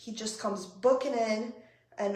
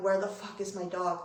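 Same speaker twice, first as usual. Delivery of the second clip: put-on panicked, sobbing ugly crying through the words; 3 semitones lower than usual. Retelling panicking over a missing dog; imitating own ugly crying. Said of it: "I'm talking like ugly crying".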